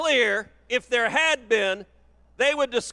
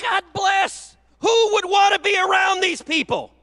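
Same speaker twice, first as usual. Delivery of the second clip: loud yelling, pitched higher; 8 semitones higher, 3 dB louder than usual. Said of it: "Why are you shouting at us?".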